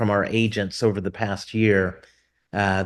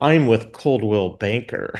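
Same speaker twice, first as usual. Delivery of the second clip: mock mocking delivery. Retelling what an agent says when meeting them: imitating a mocking agent. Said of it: "they look at me kind of mockingly".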